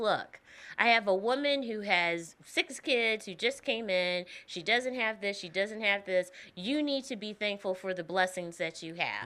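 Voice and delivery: ordinary talk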